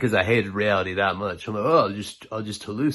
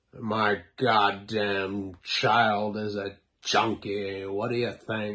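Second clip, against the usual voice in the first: mock cranky, grouchy, slow grumpy delivery. Retelling how a friend's dad answered a greeting: imitating a grumpy dad. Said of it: "he was grumpy as fuck".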